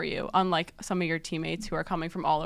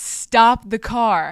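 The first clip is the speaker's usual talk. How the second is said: loud, slow, stretched-out yell. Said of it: "Quinn yells".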